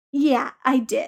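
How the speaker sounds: proud, self-pleased, simple tone. Answering an excited friend on a phone call, proudly. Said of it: "Peter said proudly".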